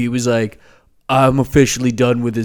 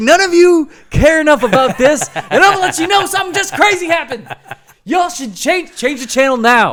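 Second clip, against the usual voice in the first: excited, hyped, pitched-up shout, acted out; 4 dB louder than usual. Retelling shouting into the neighborhood after a game-tying home run: imitating own past shouting.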